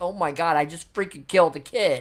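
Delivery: ordinary delivery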